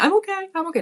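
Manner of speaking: mock shrill, pained child screaming, very high, repeated. Recalling a young boy's foot injury, retelling a child's screams. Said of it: "he just kept screaming".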